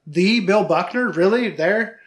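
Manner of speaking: normal talking voice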